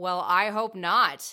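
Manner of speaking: drawn-out drawl, very loud. Narrator reading Tristan's reply to Sandy's apology, drawling. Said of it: "Tristan drawled".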